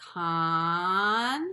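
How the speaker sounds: slow, each syllable drawn right out. Reading a big word with the kindergartners: read really slow, stretched out. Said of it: "Let's read that word really slow".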